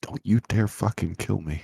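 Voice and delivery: muttering under breath. Staring down an old ship before flying in it, muttering under breath. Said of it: "I mutter under my breath".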